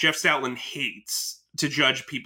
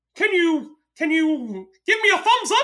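cartoon mouse voice, much higher; 5 dB louder than usual. A parent describes kids' shows talking to the viewer, doing a Mickey impression. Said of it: "That voice, Mickey impersonation".

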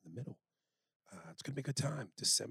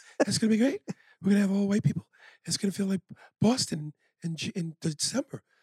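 high, loud, overly airy, light hype voice. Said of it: "I'm too airy. I'm too light".

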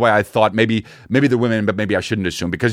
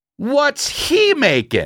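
put-on, loud, very high, blurted, swooping child's voice; 14 semitones higher than usual. Retelling what a curious boy kept asking really loudly: imitating a child saying loudly. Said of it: "says really loudly".

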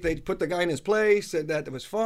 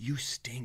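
put-on muttering under breath, lower and quieter; 6 semitones lower, 11 dB quieter than usual. Retelling a heckler in the front row: imitating someone muttering under his breath. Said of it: "He's just under his breath".

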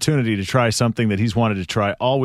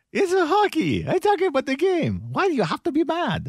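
very high put-on voice with swinging, swooping pitch. Doing an impression of the hockey goalie Ilya Bryzgalov: Ilya Bryzgalov impression. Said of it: "one of the coolest one is Ilya Brizgalov".

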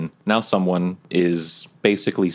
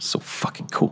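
muttering under the breath, quieter. A role-play player, in character right after a roll, muttered under breath. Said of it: "I just say under my breath".

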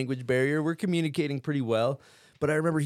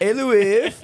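very loud, high-pitched hollering call; 8 semitones higher, 9 dB louder than usual. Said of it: "That voice".

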